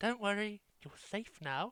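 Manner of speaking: very quiet, eerie, creepy, hushed half-whisper. Voicing a character who looks into a cage at a pet scorpion: half-whispering. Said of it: "just whisper in".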